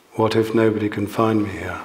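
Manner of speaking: plain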